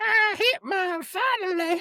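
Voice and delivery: very high, slow, mocking voice. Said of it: "they would have been like".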